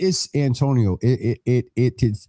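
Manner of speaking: stuttering, stammering speech. Speaker opening up about their baby sister: stuttering. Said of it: "I'm stuttering".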